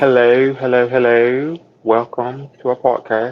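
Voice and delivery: put-on British accent. Co-host welcomes listeners to the podcast, British accent. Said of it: "You're gonna kill me with the British accent".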